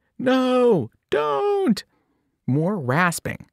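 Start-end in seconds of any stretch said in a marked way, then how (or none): 0.2-1.9 shrill, high-pitched scream. As the narrator nearly looks up at the aunt, someone to the left: screamed. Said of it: "Annabeth screamed".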